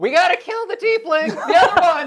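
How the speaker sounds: yell in character voice. Declaring a character's action on a game turn: in-character yell. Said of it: "I just yell".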